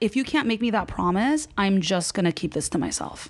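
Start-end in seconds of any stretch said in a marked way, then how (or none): none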